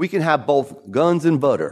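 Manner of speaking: put-on Texas accent. Quoting President Johnson during the Vietnam War era, in a Texas accent. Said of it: "Texas accent".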